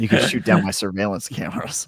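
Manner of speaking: mock menacing, threatening delivery. Repeating another player's line back at them: imitating a threatening tone. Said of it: "you said it very threateningly".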